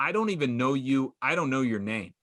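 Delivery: ordinary delivery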